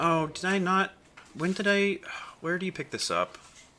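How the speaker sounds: very high, crestfallen, disappointed surprise. A streamer talking on stream, sounding disappointed. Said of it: "You sound so disappointed".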